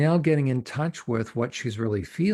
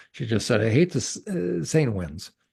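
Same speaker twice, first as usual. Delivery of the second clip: ordinary talk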